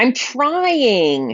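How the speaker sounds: high, whiny voice, the word "trying" stretched long. Acting out someone excusing an unfinished promise: imitating a whining voice. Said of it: "It generally said in a whining voice".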